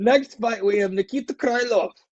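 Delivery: terrible put-on Russian accent. Announcing the next fight, reading the fighter's name in a terrible put-on accent. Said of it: "that was a terrible accent".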